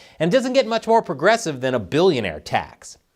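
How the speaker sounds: ordinary delivery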